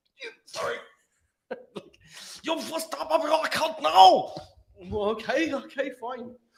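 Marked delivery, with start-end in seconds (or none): 0.2-4.3 put-on aggressive Northern German accent, higher and louder. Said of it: "a very aggressive Northern German".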